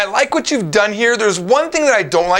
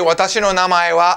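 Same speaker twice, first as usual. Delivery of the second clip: ordinary talk, nothing marked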